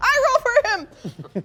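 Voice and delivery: very high, slow, drawn-out seagull cry voice. Joking that the seagulls are rolling dice: voicing a seagull. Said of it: "The seagulls".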